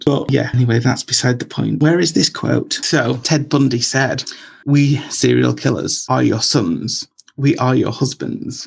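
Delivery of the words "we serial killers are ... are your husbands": stagey, dramatized, theatrical delivery. Reading a quote aloud in a dramatic voice. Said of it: "I read that in a dramatic voice, a dramatized voice".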